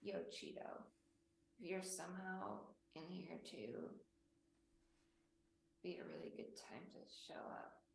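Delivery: soft, hushed whisper. Calling out to Cheeto while trying to stay hidden: whispering. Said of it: "I'm just gonna whisper so I stay hidden".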